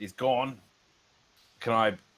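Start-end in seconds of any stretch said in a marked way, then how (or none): 0.0-0.6 mild, announced outcry in character voice. Announcing to the party that an enemy vanished: in-character scream. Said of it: "I'm gonna scream out".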